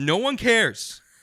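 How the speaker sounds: put-on loud voice. Retelling telling off a rude lady: retelling own loud line. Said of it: "I was loud".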